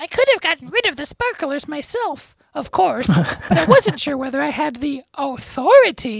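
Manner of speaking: squeaky little voice, very high and loud. Reading a book aloud on a podcast, voicing Professor Flitwick's line: squeaky little Flitwick voice. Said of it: "in his squeaky little voice".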